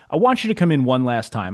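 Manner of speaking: ordinary talk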